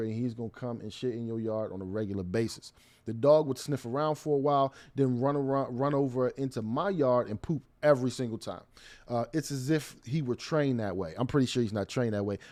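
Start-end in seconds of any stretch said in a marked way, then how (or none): none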